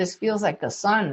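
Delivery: ordinary talk, nothing marked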